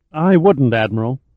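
ordinary delivery

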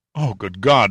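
on a gasp. Reading a horror story, a man sees disfigured remains on the deck, gasped. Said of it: "Honeywell gasped".

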